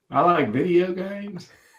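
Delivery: put-on southern accent. Doing a Southern accent after promising to: put-on Southern accent. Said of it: "I can do a Southern accent".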